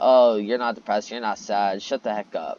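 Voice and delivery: ordinary talk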